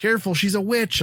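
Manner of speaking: loud high yelling. Retelling yelling at the tv while watching a movie: retelling own yell. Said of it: "yelling at the T V".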